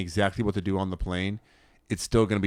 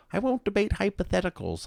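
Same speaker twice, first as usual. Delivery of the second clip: bad put-on voice, very high with big swoops; 12 semitones higher than usual. Retelling a clip from a debate show in a Jordan Peterson impression. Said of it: "I can't do a good Jordan Peterson impression".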